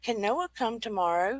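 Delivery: put-on soft, little Australian accent. Recounting a voice heard in the ear at night, repeating it in a little aussie accent. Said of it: "In a little Aussie accent".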